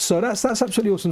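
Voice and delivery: fast, rushed, breathless delivery. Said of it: "sounding rushed out of breath".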